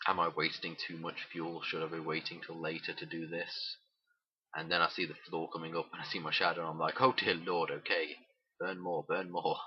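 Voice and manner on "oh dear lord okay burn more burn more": ordinary delivery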